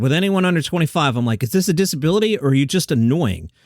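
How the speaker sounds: usual speaking voice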